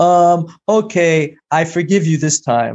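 over-dramatic sarcastic delivery. Speaker retells what she says when forgiving her over a fork: mock-dramatic sarcastic forgiving. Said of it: "I say it in like a dramatic way".

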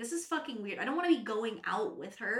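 normal talking voice

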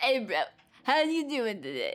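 put-on bro-type voice, like a total bro. Imitating someone who talks in a bro way, like Simlish: put-on bro voice. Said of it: "talked in, like, a bro type way".

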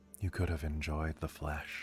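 soft half-whisper, close to the ear. Voicing an unseen presence beside a player in bed: half-whispered in the ear. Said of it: "you hear whispered in your ear".

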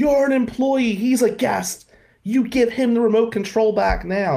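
screaming in a fit, voice pitched high. Retelling a man from the office screaming at him: retelling a man screaming. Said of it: "And he's screaming".

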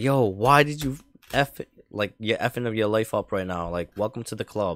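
put-on angry, pissed-off dad voice, ranting.

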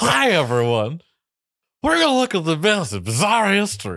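loud, very high, swooping, belted voice. Showing another speaker how he almost sounded: Harry Caray voice. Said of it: "you almost did it as Harry Carey from S N L".

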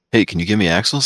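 ordinary delivery

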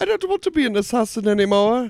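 put-on French-Canadian accent, pitched way up. Joking about how a game character would give up, in a French-Canadian accent. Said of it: "It's kind of like a Frenchie".

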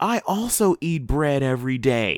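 sincere, earnest confessing tone like an advert. Retelling a comedian's joke in Oprah's sincere confession voice. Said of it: "in her version of Oprah's most sincere public confession Weight Watchers commercial voice".

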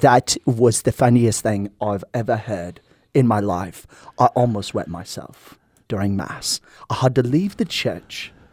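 put-on weak, poor South African accent. Retelling what the choir director from south africa said after mass: weak south african accent. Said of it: "this is doing no justice to a South African accent".

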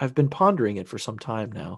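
ordinary talk, nothing marked

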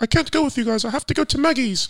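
very high, teasing put-on English accent. Mocking a friend's little brother who is making an excuse: mocking soft English accent. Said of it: "we turned it into, like, an English accent".

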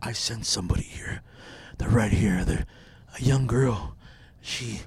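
low, sleazy, lecherous, perverted-sounding voice. Retelling what he said while walking at the park, imitating a perverted-sounding voice. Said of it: "Why'd you sound perverted?".

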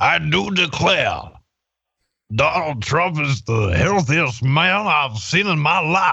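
put-on Southern gentleman accent. Describing a man to the others and quoting him, southern gentleman impression. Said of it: "And he's like".

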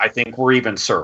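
ordinary delivery

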